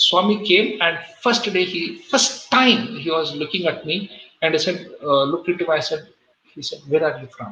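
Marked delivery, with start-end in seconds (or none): 6.9-7.5 mild, very gentle, soft tone. Retelling the first words Swami spoke to you: imitating Swami's very gentle voice. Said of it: "Very gentle voice".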